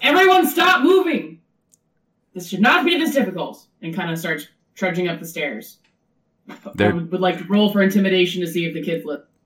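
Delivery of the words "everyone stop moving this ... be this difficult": commanding high shout with swinging pitch. Playing Sabine in a tabletop game, addressing the kids, Sabine shouting. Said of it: "Sabine just shouts".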